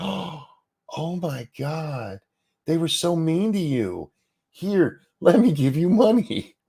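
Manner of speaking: high, gasping, gushing mock sympathy.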